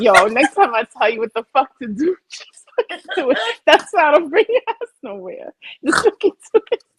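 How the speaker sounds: mock furious scolding, pitched high. Retelling how a friend scolded her for paying: imitating angry scolding. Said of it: "Rachel was pissed at me for paying".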